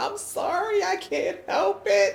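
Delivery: very high, slow, drawn-out crying voice. Retelling a moment at the airport passport counter: imitating Tam crying hard. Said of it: "crying, hard crying".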